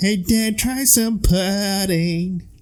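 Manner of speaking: put-on soft, high-pitched small-child voice. Describing a performer's Tiny Tim voice in a show: Tiny Tim voice. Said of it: "his Tiny Tim voice was like".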